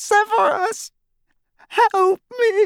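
very high, cracking, terrified voice. Narrator reads a captive woman's cry for help, cracked, terrified voice. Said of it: "said in a cracked and terrified voice".

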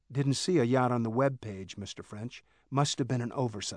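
plain reading voice

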